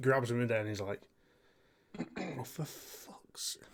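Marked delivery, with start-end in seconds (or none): 2.2-3.6 whispered, annoyed muttering under the breath with contempt. Voicing a character grabbing his keys back: gentle hatred. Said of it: "gentle hatred".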